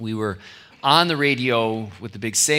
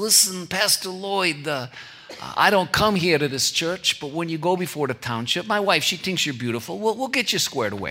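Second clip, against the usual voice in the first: higher-pitched put-on East Coast tough-guy voice. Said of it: "is exactly how he sounds".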